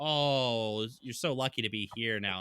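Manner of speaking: put-on condescending tone. Retelling how people reacted to hearing about Texas: imitating a condescending tone. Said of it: "give me this really condescending".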